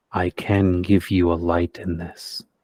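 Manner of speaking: hushed whisper. Game master voicing a dying figure's last words: whispering. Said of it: "you do hear him whisper".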